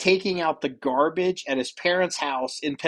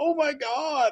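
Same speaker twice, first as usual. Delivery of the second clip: crying, tearful voice pitched very high; 12 semitones higher than usual. Retelling a passenger's meltdown as he is dragged off a plane: imitating someone crying. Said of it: "he's crying".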